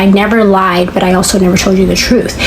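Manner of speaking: ordinary talk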